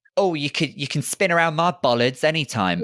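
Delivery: put-on very camp voice, high and cheeky. Acting out a flirty line as a traffic attendant: put-on camp voice. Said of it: "I put on that kind of, uh, that voice as well".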